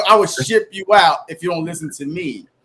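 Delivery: ordinary delivery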